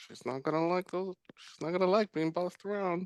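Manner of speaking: soft under-breath mutter. Voicing a character watching an interaction: muttering under breath. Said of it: "and under my breath".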